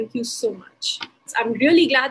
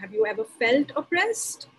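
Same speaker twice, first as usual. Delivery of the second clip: normal talking voice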